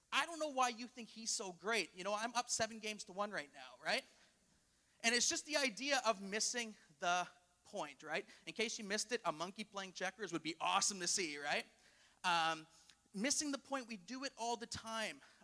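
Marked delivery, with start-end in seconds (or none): 0.1-3.8 acted-out, fed-up, exasperated tone. Retelling a joke where a checkers player answers the crowd: imitating an exasperated tone. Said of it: "with a tone of exasperation".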